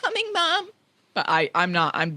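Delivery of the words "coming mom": very high voice with a waver. Imitating an actress's iconic line from the film: bad Emma Watson impression. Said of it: "do not do a good Emma Watson impression".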